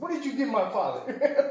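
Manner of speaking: put-on very high, angry voice. Retelling what a man's son said over the phone, imitating an angry voice. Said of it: "in an angry voice".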